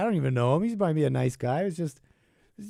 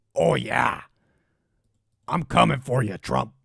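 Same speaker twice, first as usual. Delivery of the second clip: put-on voice, slow, each word drawn out; 3 semitones lower, 3 dB louder than usual. Imitating a man with a deep voice as Jesse Ventura: Jesse Ventura voice. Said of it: "I'm thinking of Ve-, Jesse Ventura".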